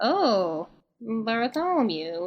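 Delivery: croaky, croaking toad-like creature voice. Narrating a scene, voicing a toad-like woman as she croaks a name. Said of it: "she croaks".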